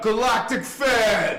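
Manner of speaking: loud, sudden shout. Reading out a list from research for videos, shouting. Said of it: "Sorry to yell or to shout".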